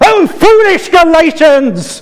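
very high, very loud, outraged angry shout. Quoting an angry letter to the Galatians as Paul: imitating angry Paul shouting. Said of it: "You want angry Paul?".

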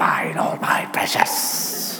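whispered creature voice, all breath, close and hushed. Showing how a creature guards treasure: Gollum voice. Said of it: "a Gollum-like inheritance".

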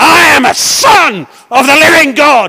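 mock full-voiced, slow, loud shout. Retelling walking out through the gates: retelling a shout. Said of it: "I shout at the top of my voice".

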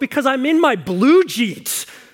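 acted shocked, offended tone. Retelling a scene where Ethel answers Lucy, mock-appalled as Ethel. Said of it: "in an appalled voice".

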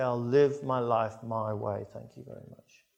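ordinary talk

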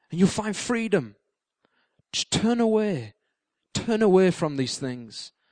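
soft, gentle, inviting, urging voice. Speaker voices the gentle voice, set against the enemy's voice: quiet, gentle voice. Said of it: "a quiet, gentle voice that says".

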